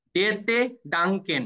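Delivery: slow, drawn-out German pronunciation, each syllable stretched.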